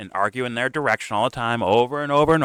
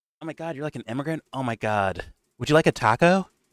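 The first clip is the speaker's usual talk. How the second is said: mocking voice of a privileged rich girl; 2 semitones higher than usual. Mocking a rich person's reaction: imitating a rich girl. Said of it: "it screams rich girl to me".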